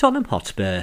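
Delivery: voice sinks, pitch falling on Tottenham Hotspur. Recalling how football results were read out, pitch falls on 'Tottenham Hotspur'. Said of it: "his voice went down when he said Tottenham Hotspur".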